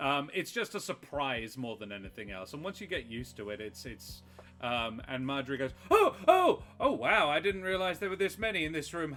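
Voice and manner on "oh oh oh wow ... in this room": very high, stretched-out shout. Playing Marjorie, who finds a room full of bugs, shouting. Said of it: "sorry for shouting".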